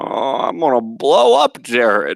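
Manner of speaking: weird-talking villain voice. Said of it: "weird-talking dude".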